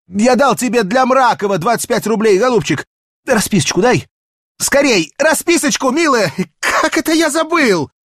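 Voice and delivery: breathless, gasping, hurried, very high pitch. Petya runs back into the train car to Varya: out of breath. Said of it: "задыхаясь".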